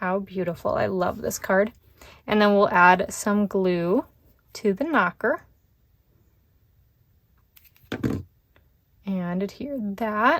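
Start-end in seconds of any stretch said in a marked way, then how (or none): 9.4-10.4 voice cracking on a word mid-sentence. Narrating the steps while making a card, voice cracking. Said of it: "voice crack".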